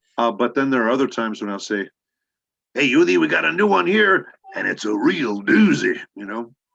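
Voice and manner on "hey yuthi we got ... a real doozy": loud, open Mexican accent sliding into Texan accent. Showing how he voices Punch in the series, he quotes a line; Punch voice, Mexican-to-Texan accent. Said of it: "I'll finish up Texan but start off Mexican".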